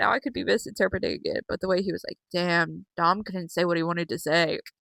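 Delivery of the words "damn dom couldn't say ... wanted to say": put-on bored over-it tone, lower and quieter. Retelling how a contestant reacted on the show: imitating Wade sounding over it. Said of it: "He sounded so over it".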